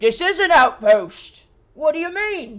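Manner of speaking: very loud giant voice. Voicing an ettin gnawing a bone who sits up: male ettin voice. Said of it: "The male Etten now kind of sits up".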